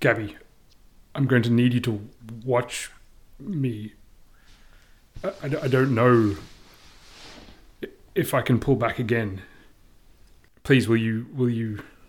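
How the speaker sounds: low voice with an edge of urgency. Turning suddenly to another character in the scene, low voice with urgency. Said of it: "in a low voice, I'm going to say, with a real sort of edge of urgency".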